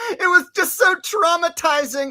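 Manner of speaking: giggly, very high-pitched talk with laughter through words. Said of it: "I'm laughing now".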